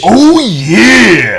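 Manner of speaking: very high, loud, belted "yeah" dragged out long. Answering whether the Kool-Aid guy sounds like Randy Savage: Macho Man Randy Savage voice. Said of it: "that is a little more Randy".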